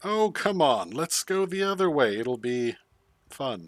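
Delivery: pure sarcasm. During a group vote on which route to take: sarcastic. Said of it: "will say sarcastically".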